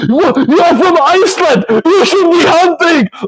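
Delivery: mock frantic, unhinged outburst, very high-pitched. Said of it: "If you are this crazy".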